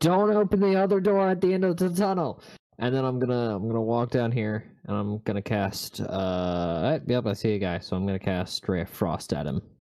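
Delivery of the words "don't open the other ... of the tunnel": very high-pitched shouted yell. Warning other characters not to open a door: yelling a warning in character. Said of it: "I'm just gonna yell".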